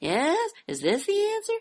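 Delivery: wishy-washy, uncertain rising upspeak on yes. Imitating people who always answer in question form, question intonation on yes. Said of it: "always answering in a question form".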